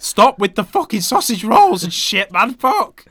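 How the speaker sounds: very loud, very high-pitched, squeaking outburst. Protesting to the other speaker, voice going squeaky. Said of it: "you're going squeaky".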